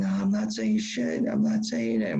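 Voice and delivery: mock tearful, hurting voice, high and swooping. Retelling a hurt man's refusal to talk: imitating crying in pain. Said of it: "crying in pain".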